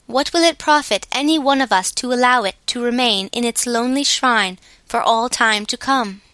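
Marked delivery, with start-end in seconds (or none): none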